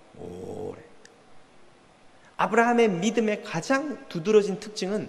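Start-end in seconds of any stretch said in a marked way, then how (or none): 0.2-0.8 오래 drawn out long and slowly. Teaching how to read a Bible passage aloud, drawn-out '오래'. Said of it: "이 오래라는 단어를 오래 발음해야 돼요".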